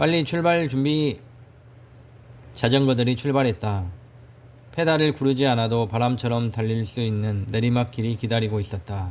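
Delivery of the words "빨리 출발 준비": calling right back, quick and sharp. A narrator voices an older brother answering a fellow rider: shouting back. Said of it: "맞받아 노려보며 외쳤다".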